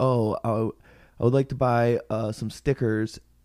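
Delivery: ordinary delivery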